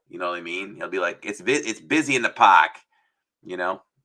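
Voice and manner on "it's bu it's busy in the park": put-on loud, pitched-up, fully rolling Massachusetts accent. Imitating a baseball announcer's way of talking: Jerry Remy's Massachusetts accent. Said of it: "he really just lets that accent roll".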